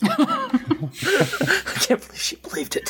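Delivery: high, slow, giggling, laughing whisper. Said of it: "like, whispers".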